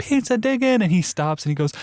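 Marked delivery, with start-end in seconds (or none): 0.0-0.8 mock very high cheer-squad yell. Retelling yelling encouragement with a GoPro on their head: retelling a yell. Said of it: "And I'm yelling".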